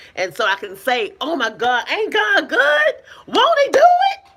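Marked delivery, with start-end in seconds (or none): 1.2-4.2 very high, loud, swooping, thrilled exclamation. Showing how she says it out of the blue, expecting something: excited exclamation. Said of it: "And I say it like that with excitement".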